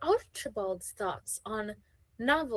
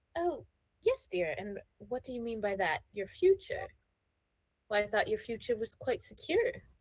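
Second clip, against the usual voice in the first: put-on voice of a titled lady. Voicing Lady Bartlett questioning a young lady about her future: voicing Lady Bartlett. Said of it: "Lady Bartlett is going to be like".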